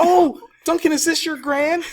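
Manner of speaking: thrilled, loud, pitched very high. Retelling a character's line: imitating someone excited. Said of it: "she's all excited".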